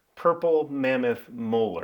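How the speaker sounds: slow, drawn out, each word deliberately enunciated. Stopping to repeat a knife handle material for emphasis: said slower. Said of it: "we need to say that slower".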